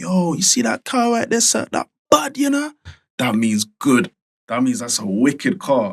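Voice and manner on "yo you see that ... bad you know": very high, put-on Jamaican accent. Explaining slang in a chat, imitating a Jamaican accent. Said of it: "or Jamaican man say".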